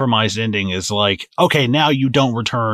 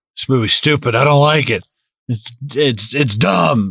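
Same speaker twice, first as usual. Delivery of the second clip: walled-off, grumpy, shut-down dismissive tone; 3 semitones higher than usual. Retelling own reaction while watching the movie: imitating own emotionally shut-down self. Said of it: "emotionally shutting down so it wouldn't get the better of me".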